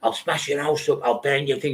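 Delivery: put-on, menacing, daft wannabe-gangster voice. Imitating how daft wannabe gangster kids threaten people: imitating wannabe gangster kids. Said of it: "these daft wannabe gangster kids, that's how they talk".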